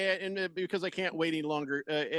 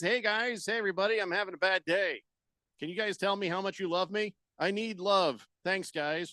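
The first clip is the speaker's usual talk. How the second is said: normal talking voice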